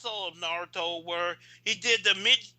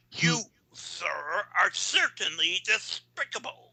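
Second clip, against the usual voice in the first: put-on animated duck voice. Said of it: "That's Daffy Duck".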